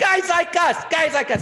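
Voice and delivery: loud shout. Retelling a friend's excited phone reaction: imitating Dana Carvey screaming. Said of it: "And Dana started screaming".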